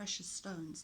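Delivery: ordinary delivery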